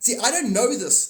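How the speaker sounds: very high, loud outburst. Speaker explaining ideas they say they don't know, in a loud outburst. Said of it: "I'm sorry to get loud".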